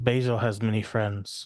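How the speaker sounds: gentle, soft whisper. Playing a character sneaking up behind an enemy: gentle whisper. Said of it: "gently whisper in his ears".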